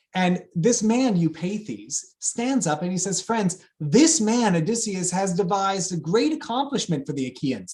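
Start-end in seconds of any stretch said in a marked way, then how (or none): 3.3-7.8 sarcastic tone. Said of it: "That's sarcasm".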